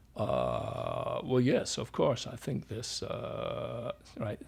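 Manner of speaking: creaky fried voice, hesitant, vocal fry on filler uhs. Imitating one of the doctors' speaking habits, vocal fry. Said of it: "that's called fry, vocal fry".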